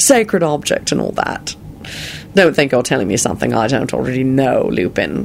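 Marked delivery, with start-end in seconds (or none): none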